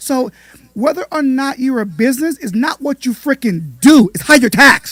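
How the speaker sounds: full-on, emphatic, loud, high-pitched yelling. Explaining that being a business depends on how you're taxed: yelling. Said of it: "Stop yelling".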